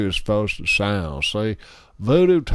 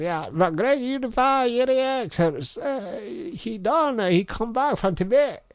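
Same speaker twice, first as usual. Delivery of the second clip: tiny, very high, squeaky little voice, rising; 13 semitones higher than usual. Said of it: "he had this little squeaky voice".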